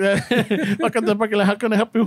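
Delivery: put-on Spanish-tinged English accent.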